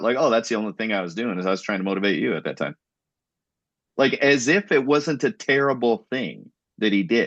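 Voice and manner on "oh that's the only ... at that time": blunt, matter-of-fact, unapologetic delivery. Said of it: "he just says it, like, flat out".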